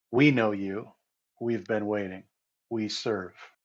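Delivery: friendly, warm, almost motherly tone. Voicing a female creature speaking to the players: friendly, almost motherly. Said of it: "she says it in a friendly way, almost motherly".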